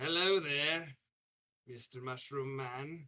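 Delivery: menacing, predatory tone. Giving a meant-to-be-friendly hello to the mushroom man at the threshold: predatory-sounding hello. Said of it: "That does not sound friendly. That sounds predatory as hell".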